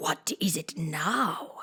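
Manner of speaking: low, deep, raspy, hoarse, very drawn-out whisper. Narrator reads an old frog answering Alice at the door, in a deep hoarse whisper. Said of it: "the frog said in a deep, hoarse whisper".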